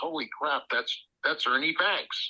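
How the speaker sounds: ordinary delivery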